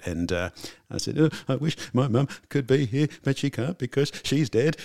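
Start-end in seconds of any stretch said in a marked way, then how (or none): 1.2-4.8 put-on high, tearful blubbering, words spilling out. Retelling what was said to someone after an emotional opening night: imitating own blubbering. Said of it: "I was sort of blubbering a bit".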